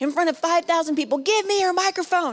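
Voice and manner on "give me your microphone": mock screaming in a high voice. Retelling a woman rushing the stage, imitating a woman screaming. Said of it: "She was screaming at me".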